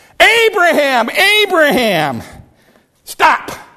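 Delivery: mock high, swooping, urgent call. Telling the story of Abraham and his son, retelling a shout from heaven. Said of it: "I think it was a shout of God".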